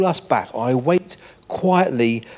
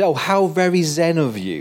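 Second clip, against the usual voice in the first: put-on sarcasm, slower pace; 3 semitones higher than usual. Retelling what he said after the speaker advised living in today: retelling sarcastic remark. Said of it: "he said sarcastically".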